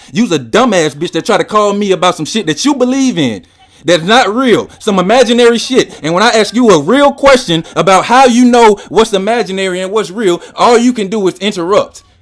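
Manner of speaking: very loud, openly rude, insulting shouting. Speaking to a woman who called him and kept interrupting, rude and insulting. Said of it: "I'm gonna be the asshole that you want me to be".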